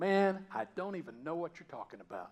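emphatic, forceful voice. Retelling Peter's denial of knowing Jesus: imitating an emphatic denial. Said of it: "he's so emphatic this time when he says".

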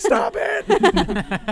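high, loud, alarmed scream from several voices.

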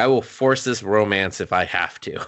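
ordinary delivery

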